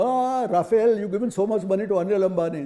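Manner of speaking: insistent, loud, repeated screaming. Retelling a politician's repeated accusation: imitating Rahul Gandhi screaming. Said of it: "Rahul Gandhi will keep screaming".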